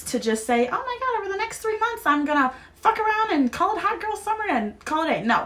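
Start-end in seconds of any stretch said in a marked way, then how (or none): 0.7-5.2 high, soft mock party-girl voice. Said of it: "not about an excuse to just say".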